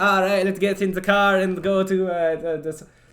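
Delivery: bad put-on Canadian accent. Speaker tries out a stereotypical Canadian accent, pronouncing car like care. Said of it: "You also have to pronounce car like care".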